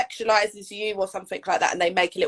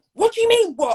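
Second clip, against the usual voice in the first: very high, irate, angry high-pitched delivery; 13 semitones higher, 4 dB louder than usual. Retelling a confrontation with a man who stared at them, imitating him irate. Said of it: "started getting so irate".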